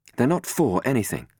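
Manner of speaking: sharp, clipped delivery. Robin replies to his question; replied sharply. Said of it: "Robin replied sharply".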